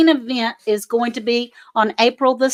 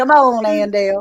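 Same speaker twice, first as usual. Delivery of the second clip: put-on Southern accent; 2 semitones lower than usual. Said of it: "she's got that Southern accent that she's going".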